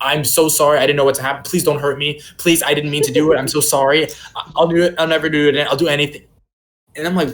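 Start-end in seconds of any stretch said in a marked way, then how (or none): 0.0-6.2 put-on begging, pleading voice. Retelling how the guy who hit them begged: imitating someone begging.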